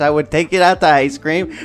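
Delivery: put-on old man yelling, scolding. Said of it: "my grandpa yelling at me".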